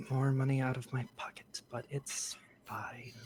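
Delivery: muttering under her breath. Voicing a character paying out of pocket: mumbling to herself. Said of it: "she kinda mumbles to herself".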